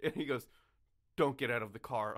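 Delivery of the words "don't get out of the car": put-on serious, stern tone. Retelling a friend's warning in the car: imitating a serious warning. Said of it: "I get a very serious look".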